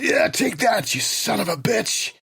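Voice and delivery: high, yelled, taunting voice. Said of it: "I think I yelled".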